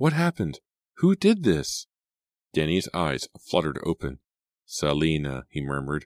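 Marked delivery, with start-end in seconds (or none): 0.0-1.9 gasped out, high and swooping. Selina finds Danny tied up with ropes, gasping. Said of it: "Selina gasped".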